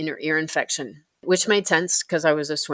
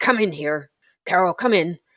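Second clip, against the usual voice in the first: imitated gruff voice. Retelling how he opened the door and called Carol in, imitating a gruff voice. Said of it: "he very gruffly said".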